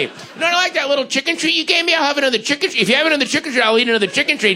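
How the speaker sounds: high, fast talking-cat voice.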